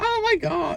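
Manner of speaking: put-on very high-pitched American girl voice and accent. Showing how all of his impressions come out the same, put on an American girl accent. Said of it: "It's just an American girl accent".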